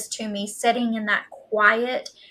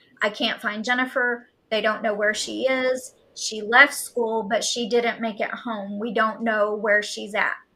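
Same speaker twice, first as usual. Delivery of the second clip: plain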